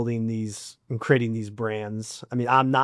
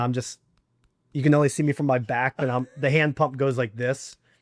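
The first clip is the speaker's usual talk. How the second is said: ordinary talk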